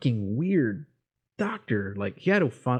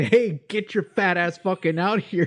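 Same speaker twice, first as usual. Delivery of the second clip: mock desperate, loud, high-pitched bellowed yell; 8 semitones higher, 4 dB louder than usual. Retelling kicking locked hospital doors, imitating own yell at receptionist. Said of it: "I'm yelling at the receptionist".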